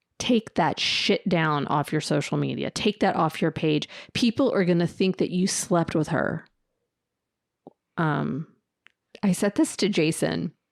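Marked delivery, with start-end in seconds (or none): 0.2-6.5 mock furious, pissed-off, angry, laying down the law. Retelling a friend's angry demand about a photo: imitating someone pissed off. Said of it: "He's pissed".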